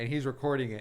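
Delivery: plain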